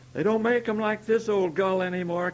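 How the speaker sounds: high, very loud cackling shout. The smith calls out across the noise of his grindstone: cackling, shouting. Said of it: "cackled the smith".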